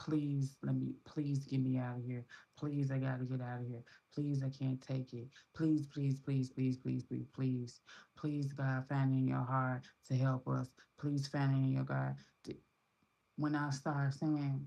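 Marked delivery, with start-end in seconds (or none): 0.0-12.2 put-on tearful pleading, begging and crying. Retelling praying in a shelter: imitating own tearful begging. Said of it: "I literally begged, cried".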